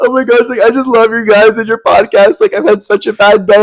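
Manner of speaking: high-pitched, tearful, freaked-out crying and rambling. Retelling how a girl approached them in public, imitating a crying girl. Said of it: "she starts, like, crying, being like".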